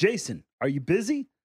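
put-on wild, crazy-sounding voice. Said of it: "He has a voice like this".

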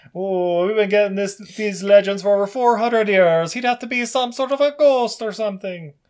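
mock Irish storytelling voice. Imitating a cop from the movie they are watching: Irish accent.

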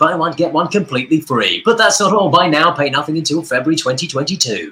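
corny sales-pitch voiceover. Showing the kind of adverts voiced for work: cheesy advert voiceover. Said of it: "you do lots of very cheesy adverts".

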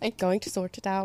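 put-on bad Irish accent. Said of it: "he would say it with that Irish accent, but it was, like, kinda bad".

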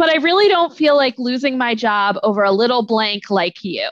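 plain

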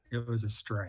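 hushed, very quiet, under-the-breath voice. Retelling the catcher's answer about the pitch: imitating someone speaking very quietly. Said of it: "he said very quietly".

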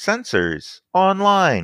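very high, sing-song, swooping computer voice. Narrating a repair in a game scene, then voicing it: computer voice. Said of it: "you hear a computer voice saying".

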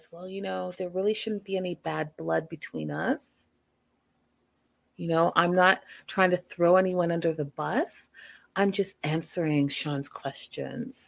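unruffled, calm, even-toned, reasonable delivery. Recapping an on-stage confrontation, imitating Jesse's calm voice. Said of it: "in his calm voice says".

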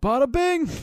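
high, loud, shouted yell. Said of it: "he just yelled out".

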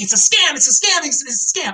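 put-on, up-in-arms crowd screaming, over and over. Imitating people who are up in arms, mock screaming. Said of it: "just screaming".

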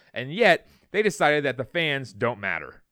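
ordinary talk

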